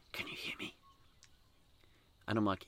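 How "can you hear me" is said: very soft, breathy, barely voiced whisper. Retelling a phone call where Mum whispers into the phone: imitating a whisper. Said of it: "whispers into the phone".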